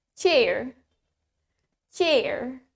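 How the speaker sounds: American pronunciation. Demonstrating a word's pronunciation for learners, now in an American accent. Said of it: "Now in American".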